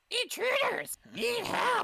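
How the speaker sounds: very high, shrill, raspy goblin voice. Voicing a goblin in the group's game, goblin voice. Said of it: "Like a goblin voice".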